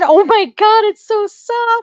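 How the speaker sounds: goofy gushing tone. Retelling picking up a plush toy with her kid watching: retold goofy tone. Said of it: "with like a goofy tone".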